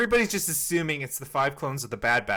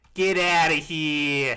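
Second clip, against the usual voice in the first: loud Brooklyn accent; 5 dB louder than usual. Told he has a Pacific Northwest accent, answering in a put-on Brooklyn accent. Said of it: "are you trying to speak in a Brooklyn".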